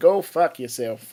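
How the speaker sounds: put-on American accent. Showing the other speaker how the line should have sounded, in an American accent. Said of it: "I was expecting that to be an, uh, an American accent there".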